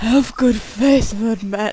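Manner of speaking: earnest, coaxing, reassuring, persuasive voice. Reading a game dialogue line in a persuade voice. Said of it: "I gotta get my persuade voice on".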